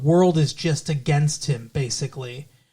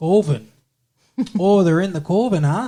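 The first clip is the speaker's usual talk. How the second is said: put-on Wisconsin accent; 3 semitones higher than usual. Joking about how "coven" is pronounced: put-on Wisconsin accent. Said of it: "Ah, Wisconsin".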